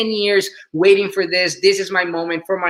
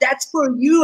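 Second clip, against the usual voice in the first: mock yell, raised and pitched up; 8 semitones higher than usual. Retelling the moment of calling to an uncle in the audience: imitating own past yelling. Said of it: "I was yelling at my uncle".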